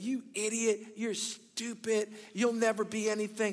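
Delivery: mild berating half-yell, held back. Demonstrating yelling insults at a $20 bill, mock yelling. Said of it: "I just started yelling at it?".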